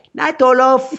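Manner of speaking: very high-pitched, fake, bad Swedish accent. A speaker jokingly imagines a brother saying goodnight at bedtime, doing a bad Swedish accent. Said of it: "I can't do an accent in Swedish".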